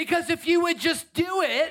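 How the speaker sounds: shouting. Speaker urging listeners to praise and worship: yelling. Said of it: "Why am I yelling?".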